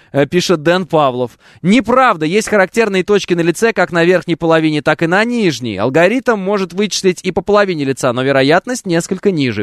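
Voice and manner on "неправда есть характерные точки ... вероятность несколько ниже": plain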